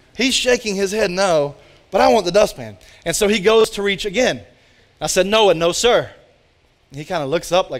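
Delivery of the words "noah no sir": a little more firm, no-nonsense tone. Retelling a warning to a toddler reaching for a dustpan: imitating a firm, louder warning. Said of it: "that voice was a little more firm".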